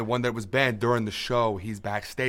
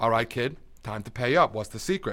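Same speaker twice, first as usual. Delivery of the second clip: plain reading voice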